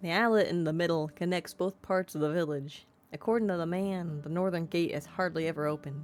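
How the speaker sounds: ordinary delivery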